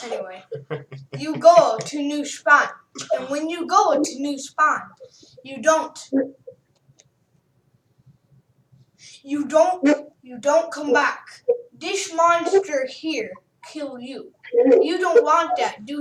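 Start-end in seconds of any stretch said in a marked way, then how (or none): 1.2-16.0 amateur attempt at a Spanish accent. Retelling what a guy said to them, in an attempted Spanish accent. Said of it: "just me trying to do one".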